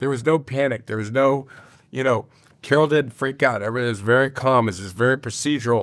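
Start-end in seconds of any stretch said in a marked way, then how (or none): none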